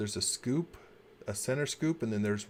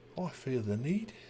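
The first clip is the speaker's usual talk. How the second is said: clumsy, bad fake English accent; 2 semitones higher than usual. Trying out bad accents with co-hosts, bad english accent. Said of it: "start trying to do some bad English accents".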